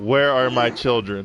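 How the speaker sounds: mock flat, deadpan, unbothered monotone delivery. Retelling what a mother asked about her children, imitating her flat monotone. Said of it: "straight monotone. Like it was nothing".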